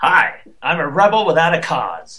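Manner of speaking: resentful, hateful tone. Playing an angry atheist in a scene as directed, angry and bitter. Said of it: "you are an angry atheist, bitter and hateful".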